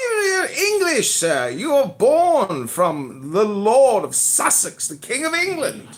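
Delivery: very high, swooping, put-on upper-class British aristocrat accent. Speaker riffing on someone being english: put-on british aristocrat voice. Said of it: "the British aristocrat type".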